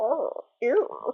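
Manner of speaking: very high, small, funny little voice. Recalling a voice someone did while playing a game, the funny Gregorios voice. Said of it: "Mar did a funny little voice".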